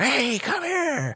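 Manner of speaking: very high-pitched, silly zebra animal voice. Retelling zebras chasing each other, the speaker voices the male calling in a zebra voice. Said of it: "in their zebra voice".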